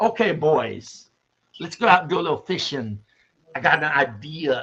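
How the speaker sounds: put-on Irish brogue. Quoting a man whose speech always sounded Irish: imitating an Irish brogue. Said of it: "he sounded like he was speaking Irish brogue".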